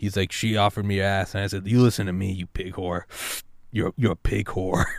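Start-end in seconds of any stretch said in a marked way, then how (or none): 1.7-4.9 put-on raspy smoker's cigarette voice. Quoting what he told her, in his raspy cigarette voice. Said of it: "in his raspy cigarette voice".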